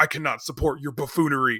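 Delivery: mock-angry, acted angry voice. Retelling how he answered Jim Carrey before storming off, imitating a pissed Tommy Lee Jones. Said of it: "Tommy Lee Jones is just like pissed".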